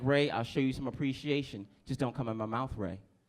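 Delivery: ordinary talk, nothing marked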